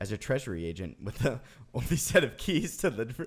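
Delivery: giggling while reading aloud. Reading a whiskey label aloud to guests, laughing while reading. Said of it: "Why are you laughing?".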